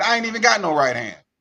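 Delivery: mock talking mid-laugh through the words. Retelling a pulled-over driver's reply to the officer, imitating someone laughing while talking. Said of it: "she pulled her arm up laughing".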